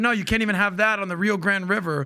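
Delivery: ordinary talk, nothing marked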